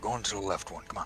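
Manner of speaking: hushed half-whisper, acted in character. Voicing a character pushing someone along: half-whispering in character. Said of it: "lean down and whisper".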